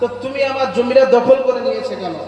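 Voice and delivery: ordinary delivery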